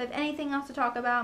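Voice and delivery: rushed, fast chatter. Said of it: "I'm sorry I'm talking so fast".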